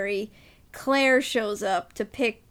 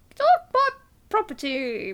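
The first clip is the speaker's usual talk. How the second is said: higher, pouty 1950s American voice; 11 semitones higher than usual. Quoting a film heroine telling men off: pouty American Doris Day voice. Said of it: "In her American Doris Day kind of pouty way".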